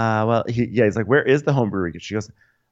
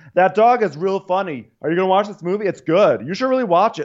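put-on yelling, higher pitch; 9 semitones higher than usual. Imitating someone with headphones in, yelling across an airplane: imitating someone yelling. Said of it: "Why are you yelling across this entire airplane?".

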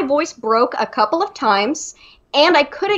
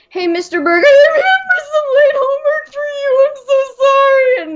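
put-on crying voice, much higher; 11 semitones higher, 4 dB louder than usual. Retelling handing late homework to a teacher as a kid, imitating own past crying. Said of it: "I just would cry at the drop of a hat".

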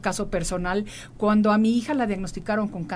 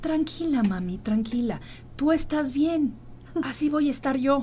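mock loving, soothing tone, higher pitch; 5 semitones higher than usual. Mother retelling how her daughter hugged and comforted her, retelling soothing words lovingly. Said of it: "me abraza muy amorosamente y me decía".

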